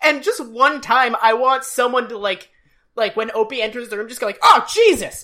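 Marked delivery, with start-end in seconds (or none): 4.4-5.2 high, jumpy, startled outburst of sudden fright. Acting out someone startled by a child entering: acting startled. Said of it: "just be startled by this tiny".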